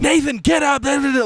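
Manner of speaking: loud, high-pitched screaming and yelling. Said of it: "screaming at me".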